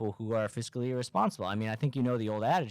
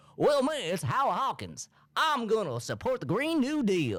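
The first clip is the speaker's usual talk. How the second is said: very high cartoon hawk voice, pitch swinging around; 11 semitones higher than usual. Imagine the man behind the name as a cartoon, playing Howie Hawkins as a cartoon hawk. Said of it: "sounds like some sort of like hawk cartoon character".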